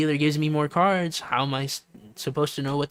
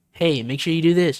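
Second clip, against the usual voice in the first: said again, louder; 3 semitones higher, 7 dB louder than usual. Describing not hearing someone, the speaker acts out them repeating the request louder. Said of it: "then they say it louder".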